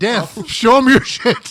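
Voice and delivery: slow, loud, booming voice.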